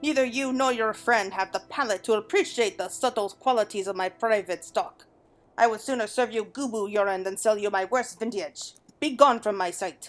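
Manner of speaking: attempted male put-on French accent. Voicing a haughty wine baron refusing a request: attempted male French accent. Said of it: "I was trying to see if I could use a French accent on that one".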